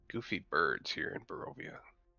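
hushed, whispered mutter under the breath. Cornelius, walking with the party past the birds, muttering under his breath. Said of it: "Cornelius mutters under his breath".

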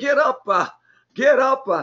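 delivery in the style of a preacher. Urging the listener to get up, like a Baptist preacher. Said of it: "I sound like a Baptist preacher".

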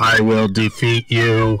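slow, drawn-out, mechanical robot voice. Imagining what a fighting robot says in a fight: robot voice. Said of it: "Like a robot voice".

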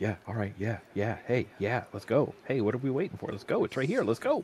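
excited, eager dog voice, swooping sing-song. Likening it to picking up the dog's leash, speaker voices the dog, imitating an excited dog. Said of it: "It's like when you pick up the dog's leash".

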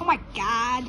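put-on, playacted girl character voice. Showing a character voice from an airplane story, put-on girl voice. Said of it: "I'm going to do the girl one from that airplane story".

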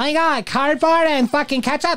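put-on very high, poorly done little-kid voice. Imitating kids who love it, in a put-on childlike voice. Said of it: "That was the worst impression of a child I've ever had".

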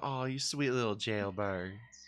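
sweet Southern belle voice. Showing how the word 'Jailbirds' sounds in the speaker's head: nice Southern belle voice. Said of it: "I can't not hear it in like a nice southern".

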